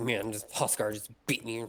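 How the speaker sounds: put-on sore, rough complaining. Guessing how a beaten player reacted: rough imitation of Mossfire, upset. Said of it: "it's a rough imitation of what he was like".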